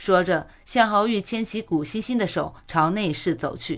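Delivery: ordinary delivery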